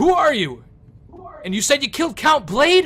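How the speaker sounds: loud booming voice. Narrating a game, voicing someone at the gates who questions the group, in a big booming voice. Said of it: "you hear a big booming voice go".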